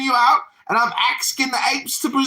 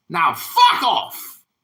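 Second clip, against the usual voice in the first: fake British accent sliding Australian, pitched up; 5 semitones higher than usual. Telling someone off while mocking their british accent: bad fake british accent. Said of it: "You sound Australian".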